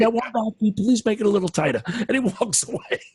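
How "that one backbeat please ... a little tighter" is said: fast, rattled-off delivery.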